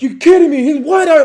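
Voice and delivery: freaked-out yelling, very high and very loud. Retelling a supervisor's reaction to the news: imitating someone yelling. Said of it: "he's yelling at me".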